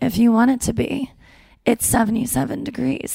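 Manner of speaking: put-on gentle, creaky woman's voice. Comparing how a man and a woman would announce the weather, put-on gentle woman's voice. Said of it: "And a woman's like".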